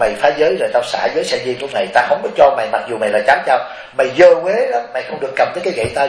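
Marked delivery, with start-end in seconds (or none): none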